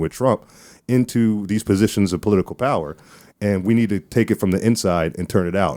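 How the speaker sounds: ordinary talk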